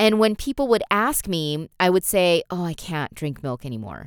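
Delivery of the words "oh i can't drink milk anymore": put-on sad tone, quieter. Speaker retells answering people who asked about drinking milk: retelling in a sad way. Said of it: "I would kind of say it in a really sad way".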